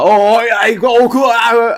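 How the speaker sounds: put-on London accent. Imitating a film director being interviewed: Guy Ritchie's put-on London accent. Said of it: "he puts on a London accent when he's being interviewed".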